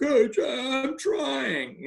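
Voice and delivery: put-on choked-up voice. Coach retelling how his player answered him, imitating a choked-up voice. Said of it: "his voice choked up".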